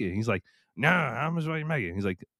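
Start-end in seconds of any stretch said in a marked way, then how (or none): 0.8-1.9 put-on high-pitched Louisiana accent. Retelling a scene from Joe Dirt set in Louisiana: imitating Joe Dirt Louisiana character. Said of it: "like, Joe Dirt when he goes to Louisiana".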